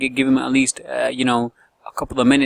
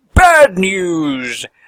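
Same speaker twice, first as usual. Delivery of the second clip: put-on loud, announcing delivery in British accent; 5 semitones higher, 7 dB louder than usual. Recapping the next item on the agenda, the speaker does a Bad News Barrett British voice. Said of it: "Especially in a British voice".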